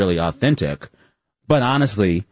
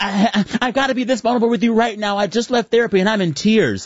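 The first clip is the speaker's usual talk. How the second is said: mock teary, very high-pitched, stumbling stammer; 13 semitones higher than usual. Imitating video makers who film themselves after therapy: imitating someone crying. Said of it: "when they come out of therapy crying".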